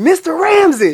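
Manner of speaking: piercing high-pitched yell. Telling an untold story of yelling out a man's name: retelling a yell. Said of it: "I literally yelled out".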